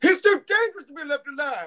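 put-on very high, loud voice with slight southern accent. Showing others another impression they can do: Windu impression, slight southern. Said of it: "you put a little bit of a southern in there".

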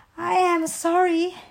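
breathless, gasping words. Frog, back to Toad after chasing the blown-away list; gasping. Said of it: "gasped the Frog".

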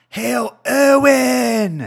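very high, rough yell, word stretched out. Recalling how someone would just yell a name for no reason: yelled. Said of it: "he would just yell, ... like that".

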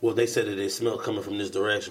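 ordinary talk, nothing marked

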